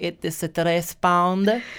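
very slow, put-on Italian accent. Speaker shows how the answer should be said: italian accent. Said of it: "You have to speak an Italian accent and be like".

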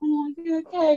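put-on concern, fake pitying, condescending sympathetic tone. Mimicking how people talk to the speaker's mum, imitating a fake sympathetic voice. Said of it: "talk to her with this voice".

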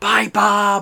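whisper-shouting. A player's character calls after Bob as he walks away, whisper-shouting. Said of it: "I kind of whisper shout".

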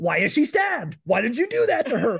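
mock frantic, very high, climbing and swooping pitch. Retelling a character accusing others over a stabbing: imitating Amber freaking out accusingly. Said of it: "she's freaking the fuck out, immediately, like, being accusatory".

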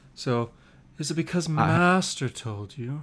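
very quiet, whiny sing-song, rising and falling. Demonstrating the Episode 2 character for the others, whiny Anakin impression. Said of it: "he's very whiny, and his voice goes high, low, high, low".

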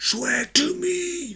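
very high, eerie, ghost-like voice. Quoting a superhero line in a ghostly Batman voice. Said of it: "That's the ghost version of Batman".

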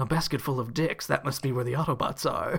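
quiet, low-volume robot villain voice. Recapping a story, quote Megatron's reaction in Megatron voice. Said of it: "you sound like Vegeta when you do the Megatron voice".

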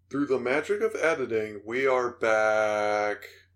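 mechanical, robotic announcer voice, drawn out. A podcast host announces the return from a break: robotic announcer voice. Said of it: "I sound like a robot".

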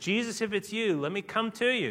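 mock bold, bullheaded, high, eager, called-out voice. Retelling Peter calling out from the boat to Jesus: Peter shouting out. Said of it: "shouts out and says".

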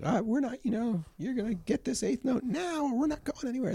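acted out, shrill, very high-pitched hollering. Retelling how they once spoke to groups of people: imitating own past yelling.

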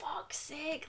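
acted furious, hushed whispered curse, angry mutter. Retelling how a man turned around on a loud guy two rows down, imitating his anger. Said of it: "he was really angry".

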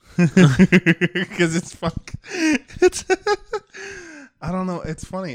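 laughing while talking. Trying to explain a joke to another speaker, laughing while talking. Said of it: "I don't know why I'm laughing right now".

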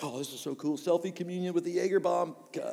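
ordinary delivery

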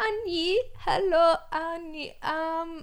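high-pitched, bad fake Thai accent. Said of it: "It was the worst accent".

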